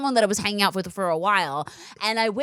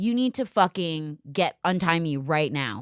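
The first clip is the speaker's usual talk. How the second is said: mock-angry voice, slower; 4 semitones lower than usual. Speaker retelling demanding that a man untie them: retelling an angry demand. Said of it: "I'm fucking pissed".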